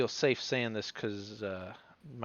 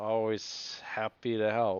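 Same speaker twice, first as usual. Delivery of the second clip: slow, a bit slurred, words running together. Playing a character described as slurring his words, slurring words a bit. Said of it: "he slurs his words a bit".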